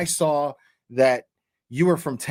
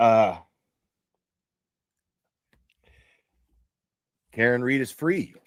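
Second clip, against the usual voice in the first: low, tearful voice, speaking while crying; 4 semitones lower than usual. On a livestream, saying the news out loud for the first time: crying while talking. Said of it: "Just saying those words out loud put me in fucking tears".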